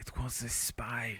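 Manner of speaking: very slow, drawn-out, hushed whisper. Whispering in character to the others during the game: whispering. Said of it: "I'm gonna whisper".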